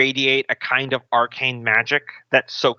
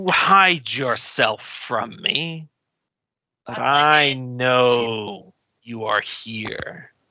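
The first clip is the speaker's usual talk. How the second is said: deep rumbling dragon voice with know stretched out. The game master voices a dragon hunting a hidden thief: rumbly deep dragon voice. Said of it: "you hear a rumbly deep voice".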